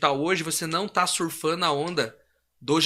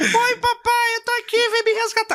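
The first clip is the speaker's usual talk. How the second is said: put-on very high, loud little-girl voice; 5 dB louder than usual. Acting out a prison scam call where the caller fakes a daughter's voice: mock daughter's voice. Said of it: "Ele mesmo imita a voz".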